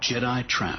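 ordinary delivery, nothing marked

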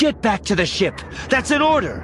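very high, seething, close-up voice. Tangled together in the pod, Nora seethes her order in Jazz's ear. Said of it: "She seethes in Jazz's ear".

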